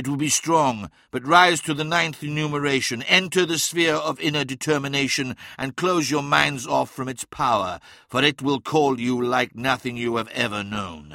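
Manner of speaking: ordinary delivery, nothing marked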